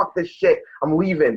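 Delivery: put-on pissed-off blowup. Retelling getting fed up digging a car out of snow: imitating own angry outburst. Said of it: "got pissed. I was like".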